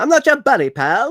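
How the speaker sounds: very high-pitched cartoon voice with Canadian accent. Quoting the Canadians from South Park: South Park Canadian voice. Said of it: "That's what he sounds like".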